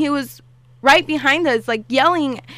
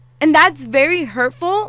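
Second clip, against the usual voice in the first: ordinary talk, nothing marked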